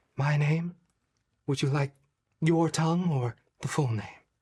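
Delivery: mild, soft, gentle, tender-sounding voice. Voicing a pegasus that answers a rider: soft gentle voice. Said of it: "a soft voice, a gentle voice".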